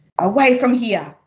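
hissing voice. The grandmother answers the mother peering through the window, hissed. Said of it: "hissed Nonna".

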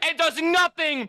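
high, slow, furious angry yell.

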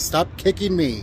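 exasperated yell, very high-pitched and fed-up. Retelling a flight where a child kept kicking: imitating a past yell. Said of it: "I started yelling at 'em".

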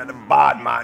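put-on low, bossy old Jamaican voice.

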